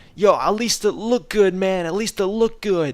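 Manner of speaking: put-on high yell. Retelling how a player stood up and yelled to everybody, retelling someone's yell. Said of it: "started yelling to everybody".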